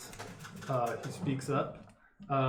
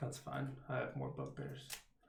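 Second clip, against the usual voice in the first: muttered under breath, much quieter; 11 dB quieter than usual. A confused character faces the party's standoff, muttering under his breath. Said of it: "Under his breath".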